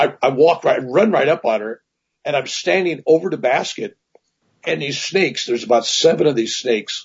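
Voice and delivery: ordinary talk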